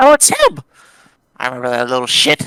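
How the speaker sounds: put-on old man character voice with swooping pitch. Storyteller voicing a figure who recognizes someone, in an old man voice. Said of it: "You said that like an old man".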